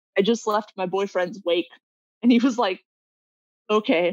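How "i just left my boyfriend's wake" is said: ordinary talk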